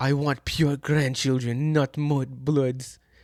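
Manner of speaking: bad, drawn-out posh British accent. Imagining the mother-in-law from a Reddit story: bad Draco Malfoy accent. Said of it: "That was a horrible fucking accent".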